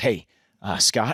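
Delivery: voice edged with panic. Retelling a Sunday call from the first AD before production, imitating a panicked voice. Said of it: "I can hear the panic in his voice".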